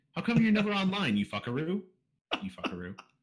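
high-pitched, questioning rising intonation. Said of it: "Read it as a question".

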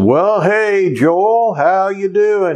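long, stretched-out Georgia drawl. Retelling a phone call from the pastor: Charles Allen's long Georgia drawl. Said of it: "He had this long Georgia drawl".

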